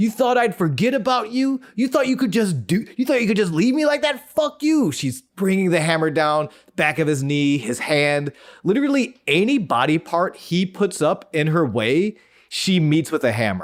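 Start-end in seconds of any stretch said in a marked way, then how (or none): 0.0-4.9 put-on, very high, rattled-off screaming. Retelling a scene where a woman attacks a man with a hammer, imitating someone screaming. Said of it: "As she's screaming".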